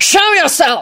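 very high, terrifying roar. Kingsley Shacklebolt roars from behind the door that Neville kicked; roaring. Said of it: "roared the terrifying voice".

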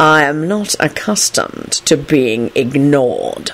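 very slow, deadly, deathly tone. A man who has been ignored, after demanding an apology to a young lady; deathly tone. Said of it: "Kingsley said in a deathly tone".

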